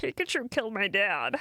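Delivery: put-on egg voice. Reading a donation that asks for a line in egg voice: egg voice. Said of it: "Egg voice".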